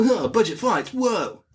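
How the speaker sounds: cartoon hedgehog voice, pitched very high. Quoting a line from a Sonic scene to the other speaker, Sonic the Hedgehog voice. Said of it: "that's my Sonic impression".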